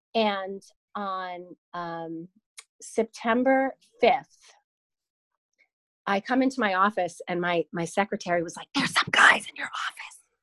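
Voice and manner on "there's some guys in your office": loud, breathy stage whisper. Retelling what a secretary said on arrival at the office: imitating someone whispering. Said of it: "Why are you whispering?".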